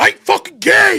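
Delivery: mock furious, very high-pitched angry shout. Retelling a coworker's reply to teasing: imitating someone angry. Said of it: "super angry about it".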